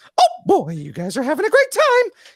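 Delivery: pitch going way up and swooping around. Showing the others the voice a friend loves: Mickey Mouse voice. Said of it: "he loves my Mickey voice".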